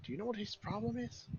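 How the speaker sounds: indistinct speech. Voicing a figure heard talking behind a door: muffled voice. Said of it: "a muffled voice of him talking".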